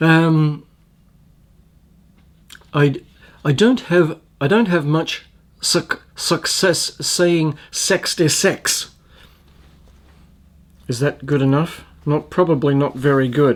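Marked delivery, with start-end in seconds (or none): 3.4-8.9 New Zealand accent attempt, "six" said as "sex". Answering a viewer who asks for a new zealand accent: new zealand accent attempt. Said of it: "can you do a New Zealand accent?".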